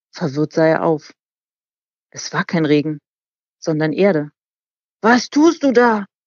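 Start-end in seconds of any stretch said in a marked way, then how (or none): 5.0-6.0 high, drawn-out scream of sheer horror. Hit in the face with earth while calling up to a boy, a man screams in horror. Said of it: "Schrie er entsetzt auf".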